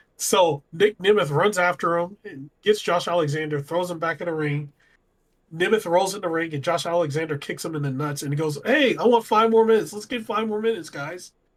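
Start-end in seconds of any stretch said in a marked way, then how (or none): 8.6-11.3 high, mocking, sarcastic taunting tone. Recapping a wrestling match, the speaker acts out the opponent's taunt: mock-sarcastic. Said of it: "Like sarcastically".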